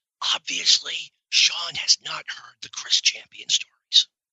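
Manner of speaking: whispered aside. Sharing a remark with the audience about another speaker: whispering to the audience. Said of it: "I need to whisper this to the audience".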